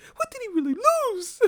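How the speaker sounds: very high, squeaky, sing-song put-on voice. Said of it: "you know how that people get that voice".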